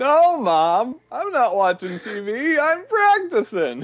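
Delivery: high, whining impression voice. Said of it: "and he goes".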